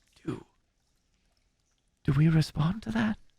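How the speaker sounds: hushed, stumbling half-whisper with a stammer. Voicing a game character who turns and asks the group: half-whispering. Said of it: "and she whispers".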